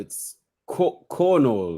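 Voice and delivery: put-on Norwegian accent on the word "cornhole". Correcting how a festival game's name is said: norwegian accent. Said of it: "said it in your Norwegian accent".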